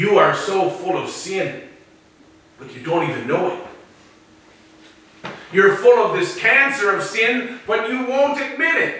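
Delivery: low, dripping sarcasm. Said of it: "Jesus' statement here is dripping in sarcasm".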